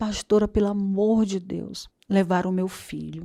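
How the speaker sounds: put-on desperate, tearful crying voice. Retelling a church sister's phone call about her son: retelling a desperate crying plea. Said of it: "ela chorando, ... desesperada".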